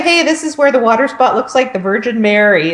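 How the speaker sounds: usual speaking voice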